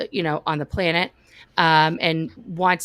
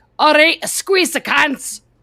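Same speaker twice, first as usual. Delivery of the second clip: put-on Scottish accent, higher and louder; 10 semitones higher, 7 dB louder than usual. Retelling how a girl from Scotland led a pre-session: put-on Scottish accent. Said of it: "the pre-session in the Scottish accent".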